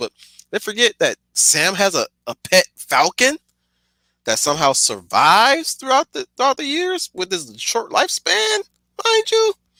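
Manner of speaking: very high voice, cracking and breaking. Speaking to listeners who are asked to send designs, voice cracking. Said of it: "my voice is cracking".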